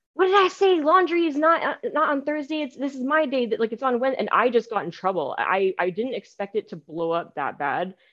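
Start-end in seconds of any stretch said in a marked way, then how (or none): 0.2-4.2 very high, screeching, screaming scolding tirade. Retelling being scolded for using the wrong laundry day: imitating someone screaming. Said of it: "she is just, like, screaming at me".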